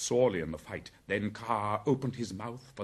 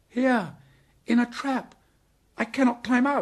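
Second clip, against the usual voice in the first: shrill, very high, very loud crying out; 8 dB louder than usual. The man cub, stuck in a trap, answers his rescuers: crying out. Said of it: "cried Mowgli".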